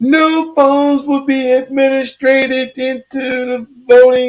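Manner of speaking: very high, shrill, drawn-out top-of-the-lungs yell. Retelling how a lady at the voting place yelled about phones: imitating a lady yelling loudly. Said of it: "she just started yelling at the top of her lungs".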